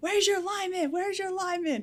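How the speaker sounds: put-on shrill, high-pitched, repeated yelling. Retelling how another lineman called out from a distance: imitating someone yelling. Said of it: "yelling from no".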